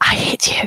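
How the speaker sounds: whispered speech. Speaking in character while another character holds her in place: whispering. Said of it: "just whispering".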